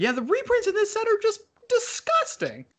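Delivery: very high, rising, swooping sing-song squeak. Speaker in a group talk about a card set, voice going really high. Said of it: "Voice got really high there".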